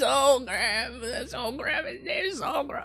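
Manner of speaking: very high, raspy creature voice, crying, sobbing.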